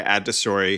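ordinary talk

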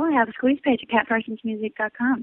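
quick, rushed speech. Guest tells the host where to hear her music: said kind of fast. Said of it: "You said that kind of fast".

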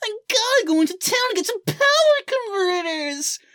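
put-on very high, boyish, young-sounding voice. Showing how a voice actor in the credits sounds, do a young Mark Hamill impression. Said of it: "he sounds back when he was like".

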